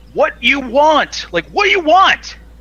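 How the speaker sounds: very high, shrill, loud scream in broken English. Retelling how a waitress screamed at the speaker's mom, retelling a scream in broken English. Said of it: "she finally just kind of screamed at my mom".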